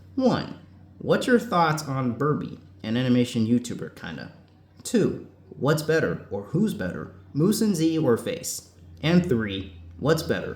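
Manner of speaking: plain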